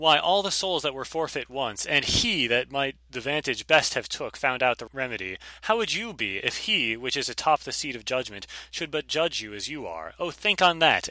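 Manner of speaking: plain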